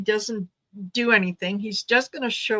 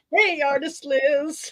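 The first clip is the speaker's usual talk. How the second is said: high, sarcastic tone. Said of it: "Is that sarcasm, [name]?".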